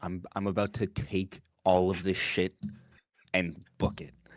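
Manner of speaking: half-whispered stage aside. Half-whispering to Iggy in character during a tense scene: half-whispering. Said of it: "I whisper".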